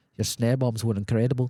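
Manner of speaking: put-on heavy Scottish accent. Retelling a fan's compliment after a show: imitating a thick Scottish accent. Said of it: "in the thickest Scottish accent".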